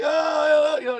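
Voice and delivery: mock choked-up sobbing, high, stretched "oh". Telling about a fired salesman getting a call from a friend: imitating him crying. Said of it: "and he's crying".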